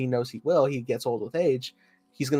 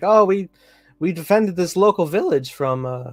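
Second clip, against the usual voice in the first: voice breaking mid-line, cracking high and loud; 5 semitones higher, 6 dB louder than usual. Imagining how the Empire could have promoted itself, voice cracking. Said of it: "voice crack, Jesus".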